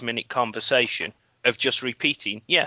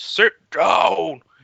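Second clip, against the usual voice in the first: giant-voiced, booming, rough roaring shout; 7 semitones higher, 7 dB louder than usual. Retelling how a friend shouted at the crowd: imitating a booming giant-voiced shout. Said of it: "in a really booming, giant voice".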